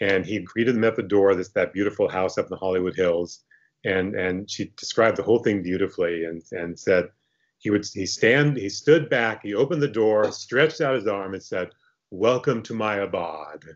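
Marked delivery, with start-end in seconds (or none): 12.1-13.6 slow, drawn-out, playfully formal and pompous. Retelling how Herriman greeted visitors at his door: imitating Herriman's mock formality. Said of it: "this mock formality".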